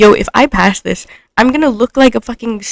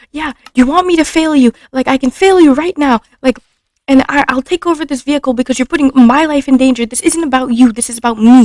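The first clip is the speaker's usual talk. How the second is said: put-on, irate, angry scolding rant; 4 semitones higher than usual. Retelling what a man yelled at them while they drove, imitating his yelling. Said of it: "he's like yelling at me and saying like".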